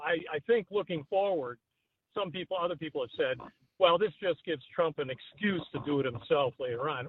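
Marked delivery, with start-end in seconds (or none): none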